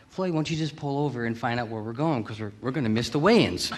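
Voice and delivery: put-on wheedling, insistent, pushy nagging. Retelling his mother urging his father to pull over: imitating his mother nagging. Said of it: "kept egging him on, saying".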